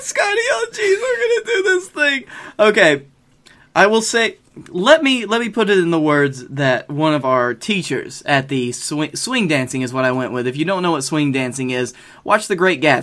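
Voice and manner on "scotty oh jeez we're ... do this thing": put-on nervous cartoon boy voice, higher. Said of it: "it's either that or Morty".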